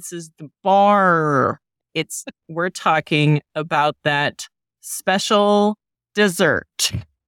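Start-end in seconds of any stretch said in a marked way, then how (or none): 0.0-1.6 heavier, thick Midwestern accent. Clarifying which kind of bar is meant: heavier Midwestern accent. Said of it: "a heavier Midwestern accent".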